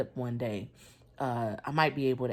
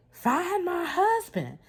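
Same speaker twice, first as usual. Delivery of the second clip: mock shrill, very high-pitched shout; 5 dB louder than usual. Retelling being unable to find the husband in hospital, re-enacting own yelling. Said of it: "So I'm yelling".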